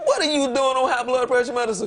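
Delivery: scolding, high-pitched yelling. Retelling a yell at a friend over her medicine: retelling a yell. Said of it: "now I'm yelling at her like".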